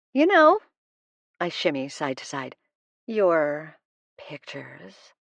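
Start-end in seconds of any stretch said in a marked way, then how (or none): 3.0-4.9 sultry, seductive voice. First-person narrator speaking to Matt; sultry voice. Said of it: "I say in a sultry voice".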